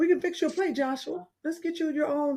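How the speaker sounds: high, soft, gentle, tender, calm motherly voice.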